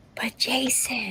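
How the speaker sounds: mock whisper, soft, slow and unvoiced.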